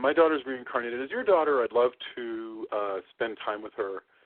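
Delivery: plain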